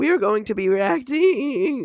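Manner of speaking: cracking voice. A channel host opening a reaction video, voice cracking. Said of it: "that was a bad voice crack".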